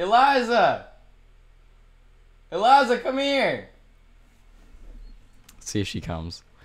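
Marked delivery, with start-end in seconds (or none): 0.0-3.7 very high, very slow, drawn-out long-distance yell. Calling a five-year-old girl to come over: yelling. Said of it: "I'm gonna yell at her real quick".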